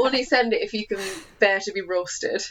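plain

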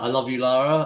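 calling out loudly. Retelling calling across the playground to your daughter in her class queue, shouting out. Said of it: "I shouted out like".

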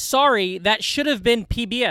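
ordinary talk

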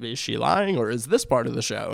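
ordinary delivery

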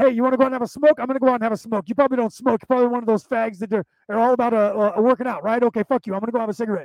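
put-on fast, nonstop chatter in a Boston accent character voice. Retelling a scene from The Departed, imitating Alec Baldwin talking fast. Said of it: "he spoke so fast".

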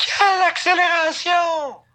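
mock over-the-top, shrill, very high sportscaster yell. Acting out Maguire's outburst during a quiet stop, imitating Maguire shouting. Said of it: "t'as Maguire qui crie".

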